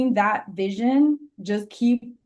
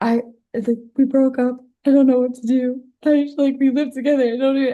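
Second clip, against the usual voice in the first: mock crying, raised and tearful throughout; 4 semitones higher, 6 dB louder than usual. Retelling a sister's phone call after a breakup: imitating someone crying. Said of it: "She's, like, crying".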